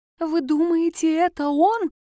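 frightened, wary, high and slow. Narrating a woman questioning the twins about him, frightened with a lowered voice. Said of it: "испуганно понизив голос".

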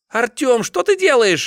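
very high, loud, shrill shriek. Narrating a novel, Anya calls out to Artyom, shrieking. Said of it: "взвизгнула Аня".

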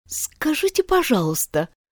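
shy-sounding. Alice asks the gardeners a question, timid. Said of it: "робко спросила Алиса".

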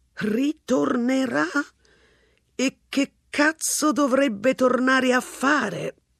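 scoffing, high, drawn-out sarcastic exclamation. Mr. ransom, looking at the empty flat, answers the neighbours, exclaiming sarcastically. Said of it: "Esclamò Mr. Ransom con sarcasmo".

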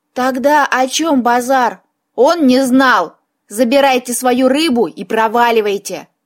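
ordinary talk

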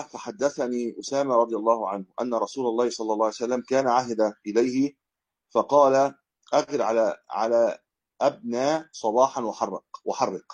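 ordinary delivery

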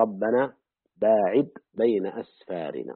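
normal talking voice

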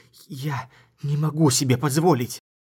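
hissing. A young woman nearly pulls her hands away from him, hissing. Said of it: "зашипела".

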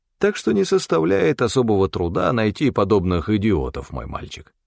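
ordinary delivery

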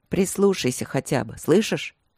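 ordinary delivery, nothing marked

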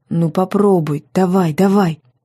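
ordinary delivery

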